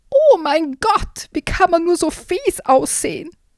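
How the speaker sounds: screechy, high-pitched, shrieking monster cry. Reading a story where a monster looms before Hip and Hopp, shrieking voice. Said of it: "eine kreischende Stimme".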